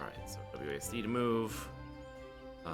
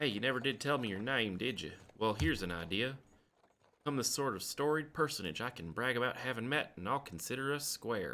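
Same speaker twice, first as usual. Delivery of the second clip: put-on Southern accent, much higher and louder; 7 semitones higher, 5 dB louder than usual. Playing a game, the speaker voices a character's dialogue: Southern accent. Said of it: "I'm sticking with Southern".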